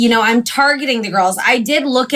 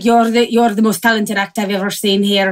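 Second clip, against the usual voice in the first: imitated Scottish accent. Imitating old gays complimenting someone at the festival: imitating a Scottish accent. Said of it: "that's Scottish".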